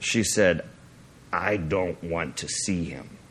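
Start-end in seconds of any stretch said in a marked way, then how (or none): 1.3-3.1 speaking in a deep, hushed man's voice. Speaker retells a woman answering in a man's voice, imitating a man's voice. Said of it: "with a man's voice".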